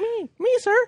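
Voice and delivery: cartoonish high voice. Teasing another speaker about how they answered earlier, in a Mickey Mouse voice. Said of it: "You have like a little Mickey Mouse voice".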